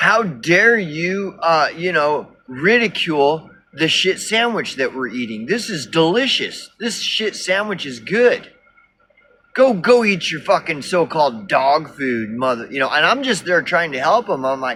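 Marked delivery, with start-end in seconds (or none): 0.0-12.7 angry, defensive, profane ranting. Imitating pissed-off commenters defending their choice: imitating pissed-off users. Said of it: "get pissed off".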